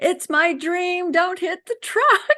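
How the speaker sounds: acted-out, very high-pitched yell. Retelling a carpool ride toward a truck: retelling her own yell. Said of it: "and I'm yelling".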